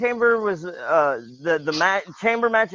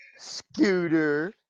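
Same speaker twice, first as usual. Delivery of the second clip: put-on, condescending, talking-down patronizing tone. Saying another speaker's name to tease him: put-on patronizing tone. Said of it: "I just said your name in a patronizing way".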